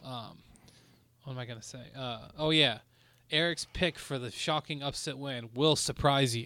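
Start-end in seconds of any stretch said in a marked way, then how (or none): none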